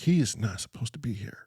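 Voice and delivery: baffled, unsure, confused, puzzled. Retelling what a woman said during a strange encounter: imitating a confused voice. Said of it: "she sounded confused".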